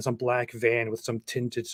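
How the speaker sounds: ordinary delivery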